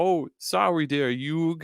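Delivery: put-on poor Brooklyn accent. Quoting a line from the show, in Joey's bad Brooklyn accent. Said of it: "I tried to do Joey's accent".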